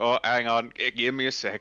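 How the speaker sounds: loud, ethereal, spectral dwarf voice. Imagining what an ethereal dwarf would say: ethereal dwarf voice. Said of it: "Just like".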